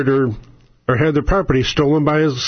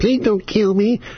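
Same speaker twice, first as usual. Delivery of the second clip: high, taunting, mocking put-on little boy voice; 6 semitones higher than usual. Retelling how a man mocked a woman begging for her life, imitating a mocking little boy's voice. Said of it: "in a little boy's voice and go".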